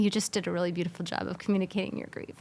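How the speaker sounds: speaking through tears, crying, tearful. Host tells a guest what they created was beautiful, crying. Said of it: "I'm actually crying again".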